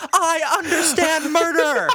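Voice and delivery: put-on screaming. Retelling threatening a brother in the street in pouring rain: retelling own screaming. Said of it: "I start screaming".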